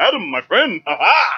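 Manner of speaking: pompous, high, grand, overinflected royal voice. Describing Aquaman in Batman: The Brave and the Bold, pompous kingly Aquaman voice. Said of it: "He talks like this and this overinflection".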